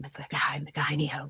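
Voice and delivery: hushed, close, barely audible whisper. Retelling whispering magic words into a friend's ear on a night hike: imitating a whisper. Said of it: "I just whispered".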